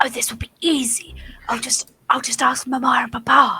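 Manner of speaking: hushed, quiet whisper. Acting out a remark whispered while leaning down, whispering. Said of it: "lean down and whisper".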